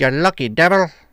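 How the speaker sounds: loud, fake put-on Irish brogue. Repeating an earlier line for the chat: put-on Irish accent. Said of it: "you were doing an Irish accent".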